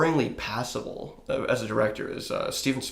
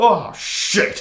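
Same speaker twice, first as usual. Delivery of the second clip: loud, high-pitched, dismayed blurted outburst; 8 semitones higher, 8 dB louder than usual. Retelling a Jaws 4 scene, doing Michael Caine's mock-dismayed exclamation. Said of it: "sounds like he dropped a bunch of".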